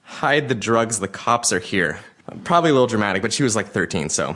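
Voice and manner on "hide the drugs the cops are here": plain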